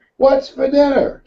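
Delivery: mock, very high, shouted yell. Telling a joke, the husband calls from twenty feet: imitating a man yelling. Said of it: "He yells".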